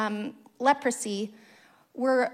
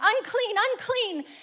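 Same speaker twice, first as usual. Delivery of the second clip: mock piercing, very high, shouted yell; 9 semitones higher, 4 dB louder than usual. Preaching about a sick man approaching crowds, you act out his warning, imitating someone yelling. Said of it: "terror from the people".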